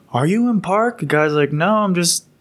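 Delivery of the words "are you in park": mock furious, high-pitched, angry yell. Recounting a man yelling at a Humvee driver: retelling someone yelling. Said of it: "He's yelling".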